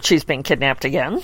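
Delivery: ordinary talk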